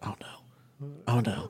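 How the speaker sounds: put-on very quiet voice. Retelling a man in a tree spotting a bear: imitating someone speaking real quiet. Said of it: "real quiet".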